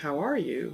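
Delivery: voice going up and down in pitch.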